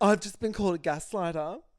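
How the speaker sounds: put-on aggrieved tone. Retelling a complaint about being called a gaslighter: imitating someone upset. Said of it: "And then he's upset".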